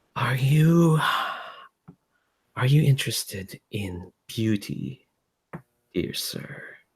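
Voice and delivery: soft-spoken hushed voice. Retelling a voice heard while looking through a model, soft voice. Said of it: "you hear this like soft voice just go".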